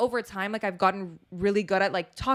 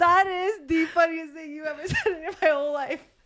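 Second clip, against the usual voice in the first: high, laughing through words, broken by laughter; 7 semitones higher than usual. Reacting to a joke just told, laughing while talking. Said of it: "we're laughing".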